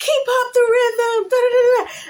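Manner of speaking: very high, shrill, loud screaming cheer. Retelling an arcade shooting game, imitating a pastor screaming. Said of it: "he's screaming at me".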